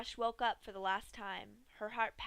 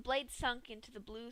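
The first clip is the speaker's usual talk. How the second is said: ordinary delivery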